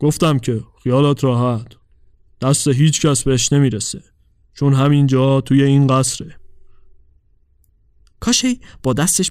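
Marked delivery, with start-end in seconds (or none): 0.0-6.4 detached, unconcerned, indifferent delivery. Kashe answers the girl's anxious questions, in an indifferent tone. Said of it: "با لحن بی تفاوتی گفت".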